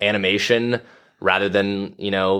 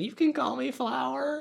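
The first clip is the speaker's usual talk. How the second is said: put-on super high-pitched, slow, unhurried little kid voice; 8 dB quieter than usual. Retelling what the skunk says at first meeting: high-pitched child Flower voice. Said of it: "got this super high-pitched voice".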